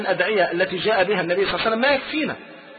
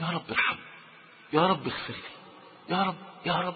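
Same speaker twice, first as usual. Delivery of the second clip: lowered voice, hushed whisper, imploring and pleading; 3 semitones lower, 10 dB quieter than usual. Urging humble supplication, the speaker demonstrates a prayer in a lowered, quiet voice. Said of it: "اخفض صوتك كده".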